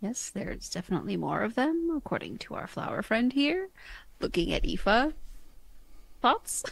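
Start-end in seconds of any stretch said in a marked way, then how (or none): 0.0-3.7 subdued, understated, quiet, soft delivery. [name] speaks to the group, then looks at Aoife, saying quietly. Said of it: "[name] will quietly say".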